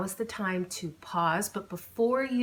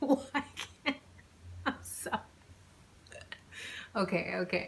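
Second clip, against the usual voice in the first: giggling while talking, quieter; 7 dB quieter than usual. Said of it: "Now I have the giggles".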